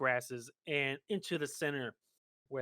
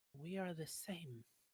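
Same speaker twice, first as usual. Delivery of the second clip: hushed, soft, high half-whisper; 5 semitones higher, 8 dB quieter than usual. Narrating a pale creature that looks at the player, in a soft half-whisper. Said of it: "kind of whispers softly".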